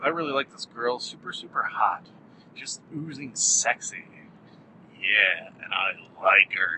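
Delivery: sultry, suggestive, insinuating voice. Praising an actress who has been in many movies: suggestive voice. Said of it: "my voice is getting very suggestive".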